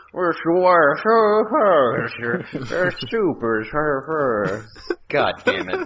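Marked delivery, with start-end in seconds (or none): 0.2-4.7 very high, slow mumble, dragging out each "sir". Imitating a movie villain no one can understand: mumbled Bane voice. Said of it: "you can't hear anything he's saying".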